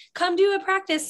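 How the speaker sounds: high-pitched, mocking put-on yell.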